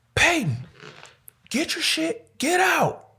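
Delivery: very high, drawn-out, hollering yell. Retelling how the head coach yelled across practice: imitating a coach yelling. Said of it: "He yells over at me".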